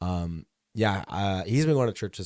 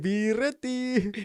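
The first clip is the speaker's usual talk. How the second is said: put-on very high voice with heavy Egyptian accent. Quoting a grandmother who is anxious about the end times: imitating grandma's Egyptian accent. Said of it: "that's how I heard it".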